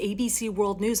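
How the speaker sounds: plain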